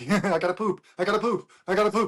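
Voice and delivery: mock frantic, maniacal yelling. Retelling a grown man shuffling to the bathroom, retelling maniacal yelling. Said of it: "Like a maniac".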